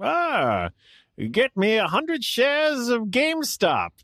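put-on very high, swooping, old-fashioned sing-song voice. Imagining an old-timey version of a co-host ordering stock: imitating old-timey Alexis. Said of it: "imagine old-timey Alexis being like".

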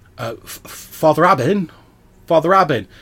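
slightly nervous voice. A character knocks on a wooden door calling for the priest, slightly nervous voice. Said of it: "in a sort of slightly nervous voice".

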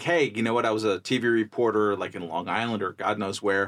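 ordinary delivery

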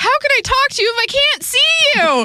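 very high, over-the-top, upset yell. Retelling what she yelled in that over-the-top moment, mock-yelling. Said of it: "She yelled".

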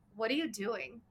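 put-on rude, demanding voice. Retelling a husband's question on coming down the stairs: imitating a rude tone. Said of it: "kind of, like, rude".

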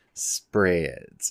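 "spreads" said low and suggestively, dirty-sounding.

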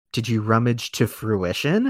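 fake whispered voice. Retelling how a man replied to a confession, retelling a whispered reply. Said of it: "also in a whisper".

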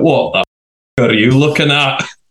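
put-on heavy, laid-on Glaswegian accent. Retelling what a man said after she rolled over to check on him, thick Glaswegian accent. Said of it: "in like this thick Glaswegian accent just went".

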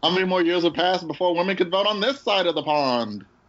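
put-on high-pitched old-time announcer voice. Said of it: "my old time announcer voice".

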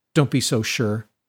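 usual speaking voice

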